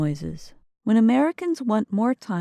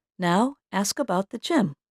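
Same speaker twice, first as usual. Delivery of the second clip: ordinary talk, nothing marked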